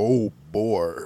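put-on low cartoon voice. Asked by another speaker to do a voice, [name] obliges; manly Mickey Mouse voice. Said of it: "do your manliest oh boy Mickey voice".

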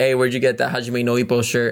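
ordinary talk

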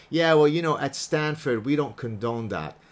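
ordinary talk

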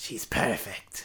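sly, hushed, slithery whisper. Trying out with a co-host how a character's line should sound, in a slithery voice. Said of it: "It's just more like slithery".

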